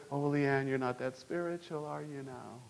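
sweet, honeyed, hushed half-whisper right in the ear. Acting out the devil tempting a churchgoer: imitating the devil, sweet half-whisper. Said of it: "very sweetly tell you in your ear".

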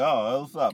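put-on Brazilian accent. Imitating a cheerful hotel desk clerk greeting a guest: imitating a brazilian. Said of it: "Brazilians don't talk like that".

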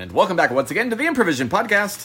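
as fast as possible. Podcast host welcoming listeners back to the show: very fast. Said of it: "You were just saying that as fast as you possibly can".

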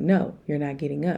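ordinary talk

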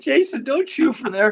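panicked, high-pitched, loud crying-out voice.

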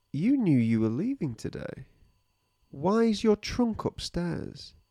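threatening tone. Speaking to Harry as if he were present: threatening tone. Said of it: "It sounded really threatening".

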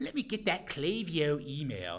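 put-on very loud, very high, swooping Baltimore accent. Show how you say a partner's product name until they beg you to stop, in a Baltimore accent. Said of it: "I use my Baltimore accent".

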